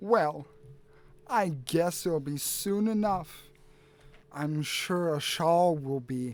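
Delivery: scornful, condescending, contemptuous sneering tone. Voicing a character who sneers back at a player: sneering. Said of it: "he sneers at you back and he says".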